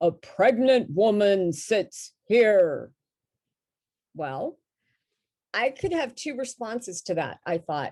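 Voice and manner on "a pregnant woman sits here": mock deep man's voice, booming yell. Recounting a voice heard on sitting down in a truck, imitating a booming deep man's yell. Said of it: "I heard this booming voice, like yelling, this deep man's voice".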